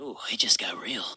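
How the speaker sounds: hushed, low, scared whisper.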